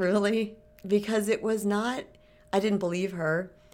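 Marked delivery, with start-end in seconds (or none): 0.0-0.5 sheepish, meek, unsure "really". Acting out her own disbelieving reply to someone, in a mock-sheepish doubtful tone. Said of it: "you guys can hear the tone of my voice, like, that's funny. Like, just kind of this sheepish, like".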